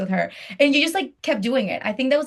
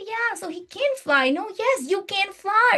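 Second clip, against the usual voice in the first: put-on very high, slow, sweet cutesy toddler voice; 10 semitones higher than usual. Describing how people read a book to very little ones, imitating a very cute voice. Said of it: "in a very cute way".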